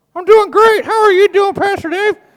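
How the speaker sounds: puppet voice, pitched way up. A pastor shows his ventriloquism with his moose puppet: Manny the Moose puppet voice. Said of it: "I'm a really good ventriloquist. Watch".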